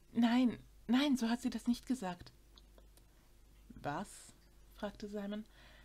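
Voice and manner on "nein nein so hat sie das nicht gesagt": eager voice. Narrator reads Daphne taking back her words after Simon's dark look, hastily adding.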